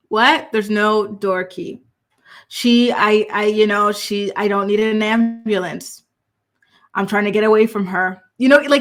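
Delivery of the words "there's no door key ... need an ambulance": casual, unhurried, slow drawl. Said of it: "he's not speaking like someone who actually is distressed".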